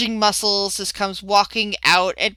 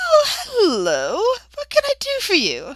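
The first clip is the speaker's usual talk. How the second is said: high, sweet, friendly woman's voice. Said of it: "the woman smiles at you and says".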